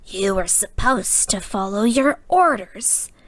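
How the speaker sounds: deathly still. A leader rebuking a subordinate he just struck, in a deathly quiet tone. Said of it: "said Zaktan in a deathly quiet tone".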